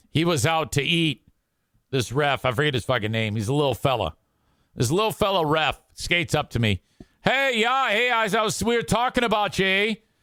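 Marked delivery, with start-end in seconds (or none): 7.3-10.0 put-on Canadian accent, pitched up. Imitating a referee who skates up to talk: imitating a fake Canadian accent. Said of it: "they have this fake Canadian accent".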